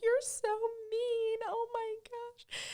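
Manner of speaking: very high, slow, tearful sobbing through the words. Retelling being yelled at by a seller: imitating own past crying. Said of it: "I just broke down in tears, crying".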